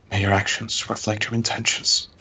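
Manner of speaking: quiet murmur, muttered under the breath. A player's character, having handed a gift to the chieftain, speaks: muttered under breath. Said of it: "say under my breath".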